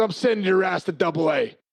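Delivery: put-on, dead serious, grave tone. Retelling a warning given right in his face: imitating Leland, dead serious. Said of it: "He's dead serious".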